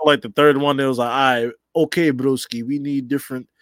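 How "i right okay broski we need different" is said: slow, put-on Russian accent. Speaker quotes what some Saudis said after the third pay-per-view; Russian accent. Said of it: "I don't know why I got a Russian accent".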